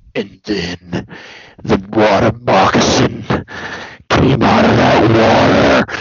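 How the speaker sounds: very low, deep, slow growl. Retelling someone's story about a water moccasin, in a Strowman voice. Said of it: "he's telling it in a Strowman voice".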